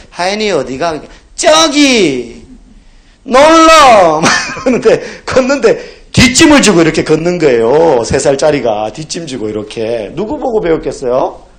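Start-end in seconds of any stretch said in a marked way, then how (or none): 0.2-4.3 put-on loud, very slow, toddler-style Gyeongsang dialect. Recalling an old video of a toddler, quoting the child in Gyeongsang dialect. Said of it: "경상도 사투리 애가 이제 막 아장아장 걷는데 사투리 쓰면서".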